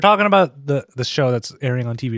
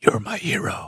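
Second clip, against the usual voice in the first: breathy, whispered masked superhero voice; 4 dB quieter than usual. Reading a Valentine card line, doing it in Batman's voice: Batman voice. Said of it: "I should do this in the right voice".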